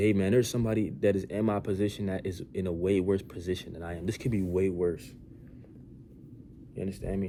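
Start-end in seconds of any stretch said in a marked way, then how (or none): none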